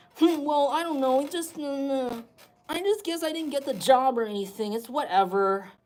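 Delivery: whiny man's voice. Imagining a grown man who whines a lot, whiny man voice. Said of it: "Maybe this person whines a lot".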